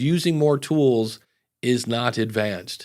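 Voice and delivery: ordinary talk, nothing marked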